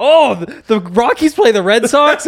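high-pitched, loud yell. Retelling how Dre came in with news: imitating Dre yelling. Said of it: "Dre comes in yelling".

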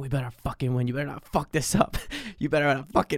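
hushed, pressuring stage whisper close to the ear. Retelling a coach half-whispering in a swimmer's ear: imitating a coach half-whispering. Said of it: "whispering in my ear".

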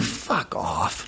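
muttered under the breath. Retelling a reaction to a classmate on the first day of class: quietly under breath. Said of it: "But quietly under my breath".

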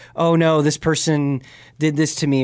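normal talking voice

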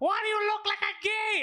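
very high, shrill yelling. Retelling how a mother calls out to her son in the street: imitating a mother yelling. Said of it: "she's always yelling".

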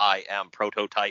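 put-on robot voice. Retelling a first meeting done in full gimmick: imitating John Cena as robot Prototype. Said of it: "he's a robot".

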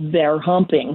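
put-on southern man's voice. Telling a story of a woman wondering aloud at a window, answering in a southern male accent. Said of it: "And in a southern accent, a male voice answered".

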